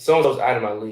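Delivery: ordinary delivery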